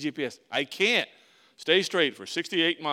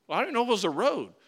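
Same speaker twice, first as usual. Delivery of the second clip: plain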